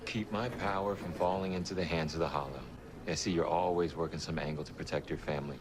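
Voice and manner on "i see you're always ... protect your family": ordinary talk, nothing marked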